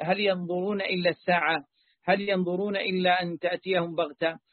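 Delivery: ordinary delivery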